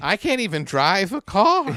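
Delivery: put-on sing-song, old-fashioned nineteen-fifties housewife voice. Mocking a woman who says her husband does the finances, imitating a 1950s housewife. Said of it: "she sounds like a fucking nineteen fifties housewife".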